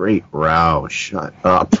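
very low, slow, drawn-out under-breath muttering. Retelling sitting through a long-winded speaker, retelling a mutter under breath. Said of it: "just under my breath".

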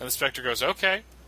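normal talking voice

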